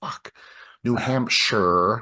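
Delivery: put-on angry, pissed-off Boston accent flaring up. Retelling a woman on the news who got pissed off at herself: imitating a pissed-off Boston accent. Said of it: "Boston accent flamed up".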